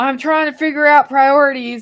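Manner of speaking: mock yelling. Retelling an argument where a man yelled at the speaker: retelling a yell. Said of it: "he yells".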